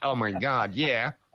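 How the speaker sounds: light, sliding slight California accent. Speaker imagining how someone would react, slipping into a California accent. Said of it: "I slid slightly into California then".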